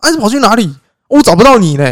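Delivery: high, loud, angry shouted tirade. Retelling how someone cursed the speaker out on seeing them: retelling a loud cursing-out. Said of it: "他就破口大骂".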